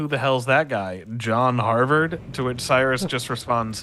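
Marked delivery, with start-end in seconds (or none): 0.0-2.2 mock knowingly sarcastic tone. Retelling pointing at a statue on a tour: retelling a sarcastic question. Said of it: "sarcastically ask".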